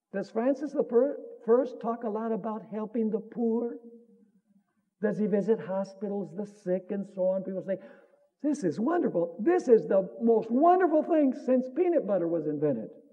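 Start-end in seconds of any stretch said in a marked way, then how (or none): none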